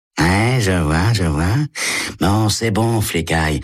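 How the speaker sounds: high, snickering, mocking sneer. Narrator reads Eddie speaking to a cop, with a sneering laugh. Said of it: "Eddie ricanait".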